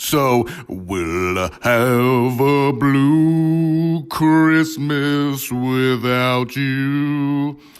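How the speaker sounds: very slow, stretched-out movie-star drawl. Doing a voice in a holiday message: Austin Butler impression. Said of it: "That was my Austin Butler impression".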